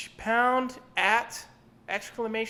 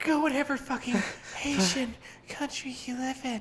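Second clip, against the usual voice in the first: play-acted winded, out-of-breath, slow delivery; 3 semitones higher than usual. Imitating the woman in the video: imitating breathless speech. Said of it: "sounded like she was almost out of breath".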